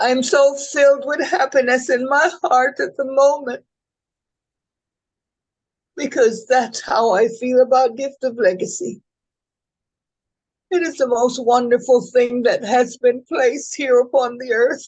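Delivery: tearful, choked voice while crying. Called on to respond after a presentation, the speaker talks while crying, choked up. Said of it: "I cannot talk because I'm crying".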